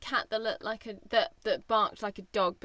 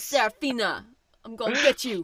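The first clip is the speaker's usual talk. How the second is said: put-on wise-guy mobster voice; 4 dB louder than usual. Discussing an animated poodle, the speaker voices its line, talking like a wise guy. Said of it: "It talks like a wise guy".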